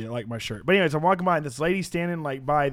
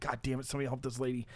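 put-on under-the-breath mutter, quieter; 11 dB quieter than usual. Retelling seeing the lady in the bread aisle again: imitating muttering under breath. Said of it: "kinda saying under my breath".

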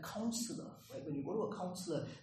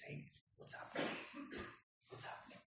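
very quiet, gentle, tender, gracious whisper. Voicing God approaching Cain with a question: gentle, tender voice. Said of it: "in a beautiful, gentle, tender way".

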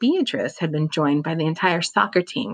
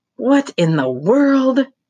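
high, loud, out-of-breath wheeze; 9 semitones higher, 6 dB louder than usual. Narrator voicing an exhausted man after attacking toy snakes, wheezing. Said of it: "He wheezed".

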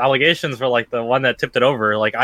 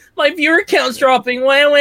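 play-acted high whimpering baby-like crybaby whine; 14 semitones higher, 3 dB louder than usual. Mocking how stressed Ninja was at Twitch, imitating his whiny baby-like crying. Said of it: "He's just fucking crying like a baby the whole time".

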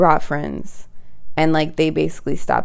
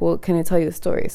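plain

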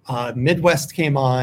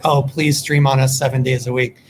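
ordinary talk

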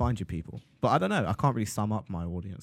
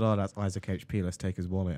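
ordinary delivery

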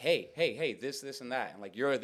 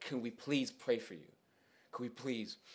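mock pleading, quieter, begging tone; 5 dB quieter than usual. Retelling how the group begged a scared woman to let them pray, retelling begging. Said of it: "we begged".

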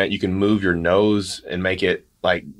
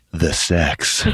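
mock late night radio DJ voice, lower; 3 semitones lower than usual. Playing along as a radio station announcer: put-on late night radio DJ voice. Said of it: "This is Maverick's late night voice".

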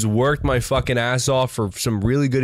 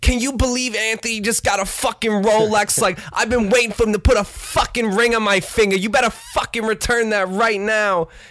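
put-on Staten Island accent, pitched up; 8 semitones higher than usual. Retelling what a woman said about her boyfriend's new Rolex: Staten Island accent. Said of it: "I just love doing the Staten Island accent".

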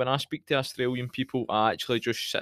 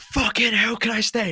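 imitated screaming, higher and louder; 10 semitones higher, 5 dB louder than usual. Retelling a reaction to a bad first touch: imitating screaming at the TV. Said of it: "I screamed at the telly".

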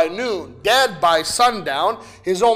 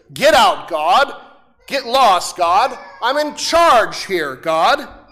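sneering, scornful, contemptuous and defiant jeer. Voicing sin as it defies god's rule, sneering. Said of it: "Sin sneers".

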